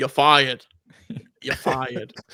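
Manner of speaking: put-on Boston-accented voice. Joking about firing James, the speaker does Donald Trump with a Boston accent. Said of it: "sounds like a Boston accent".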